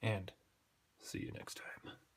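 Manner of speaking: eerie, creepy, hushed whisper. Signing off a video to internet viewers, in a creepy voice. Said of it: "Creepy voice".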